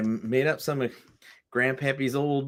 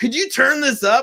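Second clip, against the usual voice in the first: play-acted, squeaky, very high, loud drunk voice; 12 semitones higher, 9 dB louder than usual. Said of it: "he is absolutely hammered".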